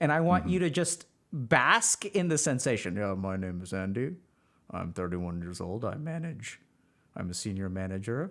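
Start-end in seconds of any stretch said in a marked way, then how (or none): 3.0-8.3 deep, low, hushed, passive, subdued delivery. Speaker tells the listener to close their eyes, then talks in an Andy impression. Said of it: "I'm going to just talk at you in my Andy impression".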